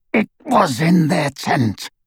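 rasped, harsh delivery. Narrator reads the werewolf Greyback answering the woman with the sword, rasping Greyback voice. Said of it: "rasped Greyback".

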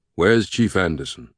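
ordinary delivery

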